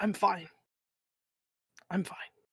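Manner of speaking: really weak, soft, feeble, barely-there voice. The storyteller voices Val, winded and recovering, answering in a really weak voice. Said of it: "in a really weak voice tells you".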